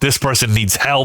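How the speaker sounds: plain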